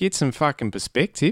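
high, wide mock Australian accent.

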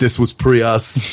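deadpan put-on action-movie robot voice. Pitching lines for a comedic car-fighting sequel: deadpan Terminator voice. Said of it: "Peppered with deadpan, uh, Terminator, like, puns".

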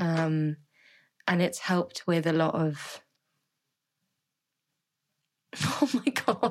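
voice catching and choking up, near tears. Speaking about something that has helped a lot, choking up. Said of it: "Are you going to cry?".

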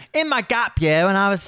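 attempted Australian accent. Joking about Australian Survivor contestants, attempting an Australian accent. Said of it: "I don't know how to do an Australian".

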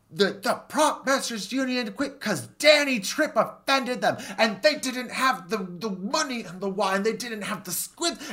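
very high-pitched, drawn-out, stretched-out yelling. Recounting a scene where she drops it and yells: imitating her yelling. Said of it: "but she's yelling like".

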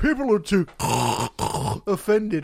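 loud, slow snorting drawl broken by laughter. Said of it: "he was snorting like a fucking pig".

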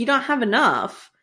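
ordinary delivery

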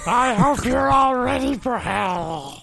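high-pitched creature voice with hell drawn out. Playing a character called J J who took over [name]: Gollum Yoda voice. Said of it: "it's like Gollum Yoda voice".

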